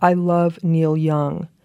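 slow, weighty, deliberate reading, as if printed huge. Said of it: "and then in big font, big text".

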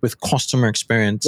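plain

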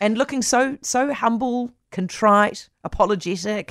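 high-pitched, sarcastic, mocking tone. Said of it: "I'm being sarcastic".

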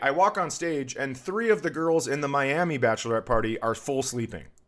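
ordinary talk, nothing marked

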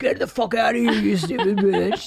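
enraged, raging, furious outburst. Retelling how the Beast rages at Belle: imitating the Beast raging. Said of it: "he rages at her like".

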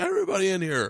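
mock monster-like yell. Describing calling everybody into bed to cuddle, retelling a monster-like yell. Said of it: "I'm yelling like".

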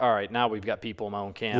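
usual speaking voice

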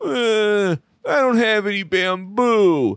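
high, slow, sorrowful panda voice, long drawn-out "uh". Giving a quiz clue by acting out the answer: sad panda impression. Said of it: "Impression time".

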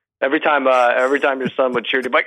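plain

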